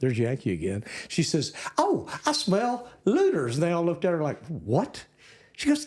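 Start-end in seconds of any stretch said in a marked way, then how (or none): 1.8-3.5 put-on slight Texas accent, very high, slow, drawn out. Speaker retells their little sister's remark to the Yankee girls, in a little Texas accent. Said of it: "with a little Texas accent".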